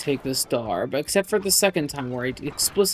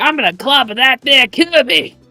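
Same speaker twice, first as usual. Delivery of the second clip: bad put-on Southern voice, higher and louder; 10 semitones higher, 12 dB louder than usual. Recalling the Kirby anime's villain voice: horrible King Dedede impression. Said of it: "that was a horrible, horrible rendition of him".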